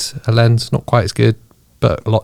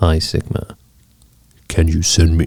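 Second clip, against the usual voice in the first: mock deep voice, lower; 6 semitones lower than usual. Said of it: "The deep voice?".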